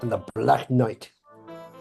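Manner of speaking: plain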